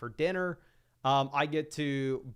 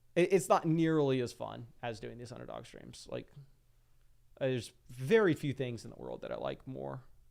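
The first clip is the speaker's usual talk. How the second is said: ordinary delivery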